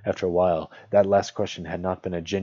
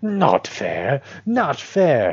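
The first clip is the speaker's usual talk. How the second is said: high, loud, swooping, hissing creature voice; 7 semitones higher, 6 dB louder than usual. Narrator reading a story aloud, Gollum protests Bilbo's question, hissing Gollum voice. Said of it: "He hissed".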